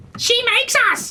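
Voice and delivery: very high-pitched voice of a raven flock. Narrating a game, voicing ravens answering a player's questions, raven flock voice. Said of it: "Mark's trying to think what's his raven flock voice".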